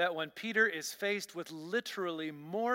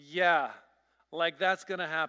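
mock sarcastic, doubting, scoffing tone; 2 semitones lower, 6 dB louder than usual. Acting out the tone behind a reluctant 'if you say so', mock-sarcastic, doubting. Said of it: "I have to believe the tone was".

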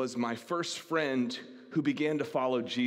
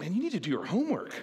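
high, condescending, talking-down lecture; 7 semitones higher than usual. Retelling own past remark to a friend in class, imitating a condescending tone. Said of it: "in a condescending way".

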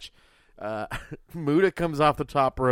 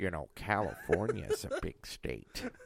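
put-on mumbling voice, lower and quieter; 6 semitones lower, 11 dB quieter than usual. Doing a Robert Durst impression about California: Robert Durst impression. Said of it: "You like my Robert Durst impression?".

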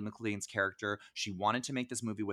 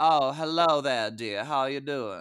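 loud, put-on southern New Orleans accent; 4 semitones higher, 7 dB louder than usual. Complaining about a character whose accent kept changing, imitating her New Orleans accent. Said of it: "she was from New Orleans".

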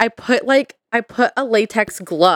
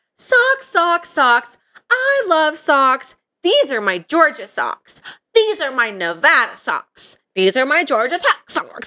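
put-on pitched-up voice of a young twelve-year-old girl; 5 semitones higher than usual. Describing an old sock video of herself, in a high-pitched 12-year-old voice. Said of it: "imagine like my high-pitched voice of like a 12-year-old [name]".

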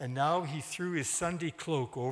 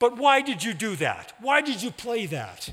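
furious angry outburst, very loud; 7 semitones higher, 9 dB louder than usual. A narrator reads Dr. Van Horn cutting into Kays's explanation, interrupting angrily. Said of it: "interrupted angrily".

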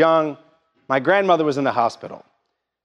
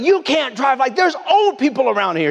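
shrill, very high-pitched, furious, angry yelling; 11 semitones higher than usual. Recounting a man in a golf cart confronting them, the speaker retells his yelling. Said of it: "he's just yelling at me".

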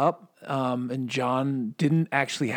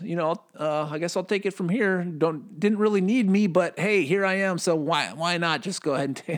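sarcastic, mocking put-on impression, higher; 5 semitones higher than usual. Imitating people who say Revelation already happened: mocking imitation of opponents' view. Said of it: "that was a cynical shot".

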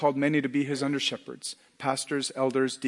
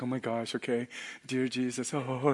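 mock awkward giggling, quieter and slower; 6 dB quieter than usual. Retelling how a girl prayed aloud at devotion, imitating awkward giggling. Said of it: "And she's giggling".

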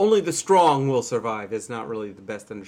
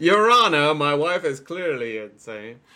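slow, earnest pleading tone; 4 semitones higher, 4 dB louder than usual. Pretending to address a judge in court: mock courtroom plea. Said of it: "mock courtroom plea to a judge".

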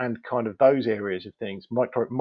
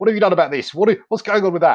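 put-on very loud, shrill, furious shouting voice; 8 semitones higher, 9 dB louder than usual. Acting out a campaigner questioning council officers, mock-angry campaigner voice. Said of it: "the traditional campaigner, very angry voice".

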